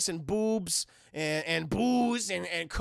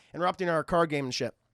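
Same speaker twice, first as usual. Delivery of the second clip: plain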